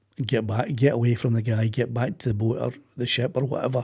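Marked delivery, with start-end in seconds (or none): none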